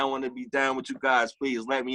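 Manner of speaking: crying, pleading delivery. Retelling a fan at the doorstep ringing the bell: imitating someone crying and pleading. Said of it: "He's on his doorstep crying".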